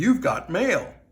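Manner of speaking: fake computerized announcer voice. Announcing a package arrived in the mail: old school AOL voice. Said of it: "use that old school A O L, uh, voice".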